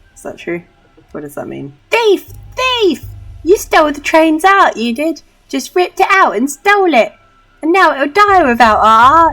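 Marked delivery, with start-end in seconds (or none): 1.9-9.3 terrible put-on Cockney, very high, shrill and loud. Voicing a character who accuses someone of stealing art, in a terrible put-on voice. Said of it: "It's a terrible voice".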